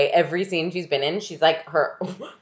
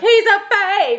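screeching, very high, shrill scream; 6 dB louder than usual. Retelling a woman who was screaming backstage, imitating her screaming. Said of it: "she's also screaming backstage. She's like".

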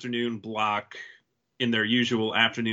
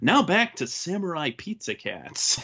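put-on pitched-up, sing-song kids' TV announcer voice; 6 semitones higher than usual. Retelling a syndication block announcer's line: imitating a tv announcer. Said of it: "the guy who was the police chief on Power Rangers as the announcer guy".

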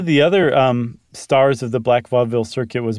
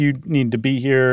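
plain

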